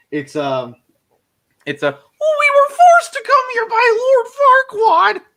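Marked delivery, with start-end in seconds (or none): 2.2-5.1 very high, loud puppet voice, "Lord" stretched out. Doing a line from Shrek: Pinocchio from Shrek voice. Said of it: "I can do Pinocchio from Shrek".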